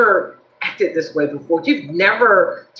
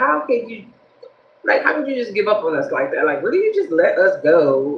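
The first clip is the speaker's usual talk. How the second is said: ordinary talk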